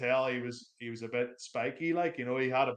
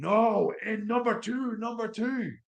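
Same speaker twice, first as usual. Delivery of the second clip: mock, shrill, high-pitched, dragged-out shout; 10 semitones higher, 4 dB louder than usual. Retelling how an airport security guard behaved: imitating someone shouting. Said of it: "he started shouting at me".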